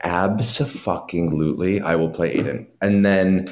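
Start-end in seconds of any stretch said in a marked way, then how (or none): none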